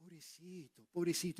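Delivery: soft, mock-sympathetic murmur.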